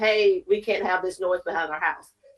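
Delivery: plain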